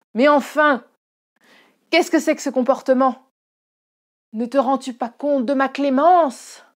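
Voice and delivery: booming, very loud, indignant, wrathful outrage. After slapping his coldly silent favorite, the sovereign speaks: wrathful sovereign. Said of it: "Si bien que l'ire du souverain se réveilla".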